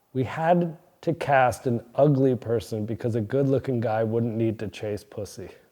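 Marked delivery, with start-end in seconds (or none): none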